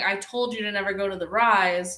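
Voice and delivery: ordinary delivery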